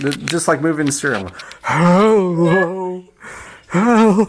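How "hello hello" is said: put-on sounding like an old man. Saying hello while doing a stereo effect: old man voice. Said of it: "You sound like an old man".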